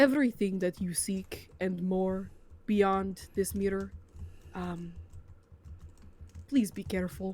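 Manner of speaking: quiet, hushed, careful tone. A narrator voicing a character who addresses the listener, in a hushed tone. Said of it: "addresses you in a hushed tone".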